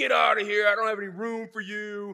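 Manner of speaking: mild, light half-yell. Retelling a motel manager turning travelers away, retelling a manager's yell. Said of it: "yelling at him".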